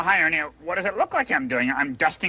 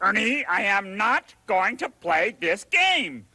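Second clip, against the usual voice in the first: annoyed, flatly angry, pitched-up tone; 5 semitones higher than usual. Refusing to play the other speaker's guessing game: angry. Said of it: "Angry, right?".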